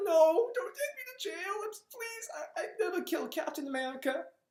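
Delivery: very high, tearful, scared, crying voice. Retelling a comic scene where a boy begs not to be jailed: imitating Miles crying and pleading. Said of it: "he gets on his knees and he's crying".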